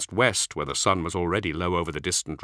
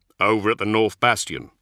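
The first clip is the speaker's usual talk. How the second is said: plain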